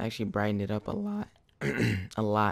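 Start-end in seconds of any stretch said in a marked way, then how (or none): 0.0-1.3 voice cracking mid-phrase, breaking. The speaker comments on how the colors brightened a costume, voice cracking. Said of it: "Voice just cracked there".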